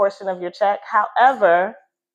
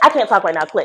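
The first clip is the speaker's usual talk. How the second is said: curt, dismissive, rude, nasty, put-on tone; 4 dB louder than usual. Retelling how the agent brushed off a call: imitating a rude, nasty agent. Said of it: "real nasty".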